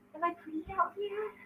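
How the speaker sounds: put-on hushed, soft, childlike little girl voice. Asked to say a line like a little girl, the speaker uses a little girl voice. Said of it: "Like a little girl".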